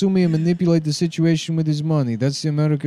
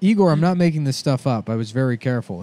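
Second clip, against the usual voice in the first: plain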